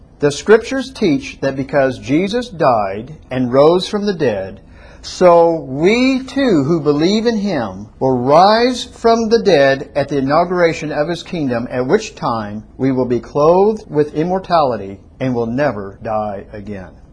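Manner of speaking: slow, careful read-aloud. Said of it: "I'm going to read it slowly".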